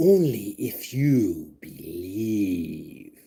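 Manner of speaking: very slow, low mystical intoning, "believe" drawn out. Reading a card's magical phrase after saying it needs a mystical voice. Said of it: "you have to sound mystical".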